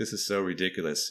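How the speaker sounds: put-on scornful, mocking laughter. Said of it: "laughing at it".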